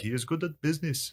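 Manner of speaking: poor put-on Indian accent, soft and high. Retelling what a man in an airport said, bad indian accent impression. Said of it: "my Indian impression there was bad".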